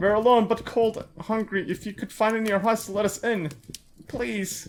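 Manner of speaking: high, pleading, begging voice. A mother with her son outside, asking those inside to let them in; pleading. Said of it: "Hello, my name is [name], and this is my son [name]. / Let me in, I know someone who's in there. Please, we're starving. / Mommy? What's happening? Is no one there? I don't know, sweetie. I'm just".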